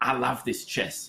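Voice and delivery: put-on very strong London accent. Telling a prison chess story, the speaker quotes a prisoner in a very strong London accent. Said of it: "he speaks very, very London accent".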